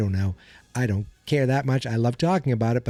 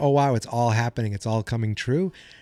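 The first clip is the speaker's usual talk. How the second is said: ordinary talk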